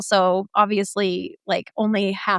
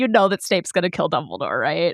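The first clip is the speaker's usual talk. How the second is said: mock, very snotty, superior know-it-all delivery; 4 semitones lower than usual. Retelling how a cousin spoiled the book: imitating a snotty tone. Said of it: "in a very snotty way".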